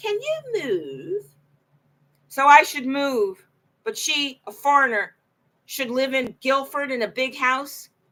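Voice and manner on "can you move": put-on very high-pitched British accent. Retelling asking Hazel for a recommendation and her reply, imitating Hazel's British accent. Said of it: "she said with her British accent".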